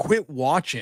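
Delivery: loud yell, called out like a fan. Retelling what was yelled during the game: retelling own yell. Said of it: "I yelled".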